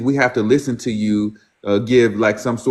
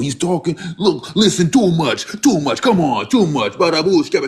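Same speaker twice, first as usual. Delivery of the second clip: ridiculous put-on New York Italian accent, pitched up; 6 semitones higher than usual. Mocking a man who tells others who they are, imitating New York Italian accent. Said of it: "He almost has a New York Italian accent".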